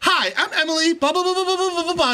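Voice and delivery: loud put-on voice. Retelling a show scene where Emily introduces herself to the team: loud Emily impression. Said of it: ""Why are you so loud?"".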